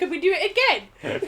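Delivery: put-on high-pitched voice speaking through giggles. Retelling a sister's question from inside a suitcase: imitating laughing while talking. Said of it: "she started laughing, saying".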